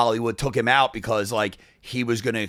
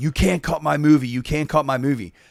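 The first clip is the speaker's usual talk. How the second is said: mock shouting, loud, repeated over and over; 4 semitones higher than usual. Retelling a director yelling at a premiere: imitating Stanley Kubrick yelling. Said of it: "So Stanley Kubrick is yelling".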